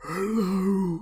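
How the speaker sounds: layered multi-pitch creature voice from throat, drawn out. Voicing a creature that answers the player characters: creature speaking in multiple pitches at once. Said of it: "in kind of multiple pitches all at once".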